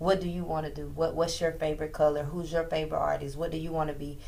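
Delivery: normal talking voice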